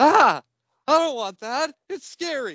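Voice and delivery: put-on, very high, loud, frightened shriek. Retelling opening a scary gift as a child: imitating own childhood scream. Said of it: "dropped and screamed".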